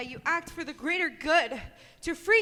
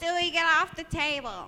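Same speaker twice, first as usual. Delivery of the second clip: put-on Brooklyn accent. Asked for a Brooklyn accent, the speaker does a Lois Griffin Brooklyn accent. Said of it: "give me like your best like Brooklyn accent".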